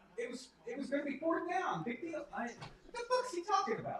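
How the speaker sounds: high, rising, keyed-up, excitable chatter. Reacting to Tony Romo's excited commentary, unusually high-pitched voice. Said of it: "Why is my voice so high right now?".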